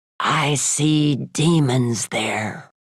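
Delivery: very slow, ominous, foreboding rasping voice. Leaning back in his office chair, a man answers the marketing men: ominous rasp. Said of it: "in an ominous voice, he rasped".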